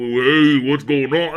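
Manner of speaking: put-on deep voice. Acting out how a woman with a very deep voice would reply when she is being chatted up, imitating a very deep voice. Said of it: "you're trying to smooth talk".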